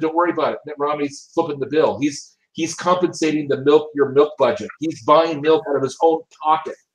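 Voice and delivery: ordinary talk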